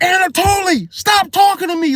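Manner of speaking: furious, angry snapping, pitched very high. Retelling snapping at a man who kept yapping, retelling snapping angrily. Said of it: "Like I just snapped".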